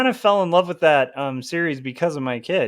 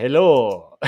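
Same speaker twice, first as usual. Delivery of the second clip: put-on classic old movie vampire voice, louder; 4 semitones lower, 3 dB louder than usual. Speaker showing the fun old-style vampire greeting, in a classic vampire voice. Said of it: "isn't it so much more fun when it's like".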